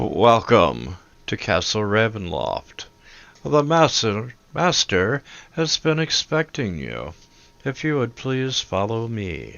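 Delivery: sing-song voice with big swooping pitch. Voicing a gentleman greeting players at a castle door: Jeeves character voice. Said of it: "out through the door steps this gentleman, and he's like".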